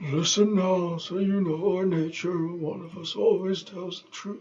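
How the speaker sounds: hushed whisper. A character told to quiet down goes on speaking, whispering.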